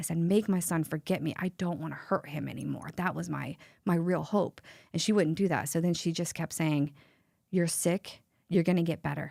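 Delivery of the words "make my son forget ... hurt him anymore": acted-out tearful, sobbing voice. A mother recalls what she begged of a woman, retelling a sobbing plea. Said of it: "I was sobbing when I said it".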